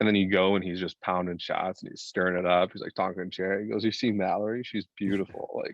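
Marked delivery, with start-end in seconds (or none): none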